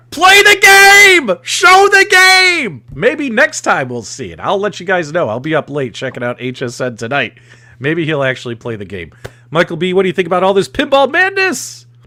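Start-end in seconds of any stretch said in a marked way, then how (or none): 0.2-2.8 high, slow, very loud screaming. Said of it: "I was literally screaming".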